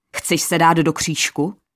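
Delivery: ordinary delivery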